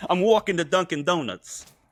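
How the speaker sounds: Boston-New York blend accent. Repeating a line after being told to say it: attempting New Haven accent. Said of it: "that's actually, like, passable".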